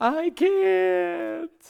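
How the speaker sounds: put-on high, creaky boy voice, tearful.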